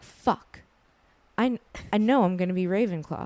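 mock upset, dead serious, humorless tone. Recounting a friend's reaction, the speaker acts out what the friend said, imitating someone upset.

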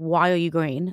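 ordinary talk, nothing marked

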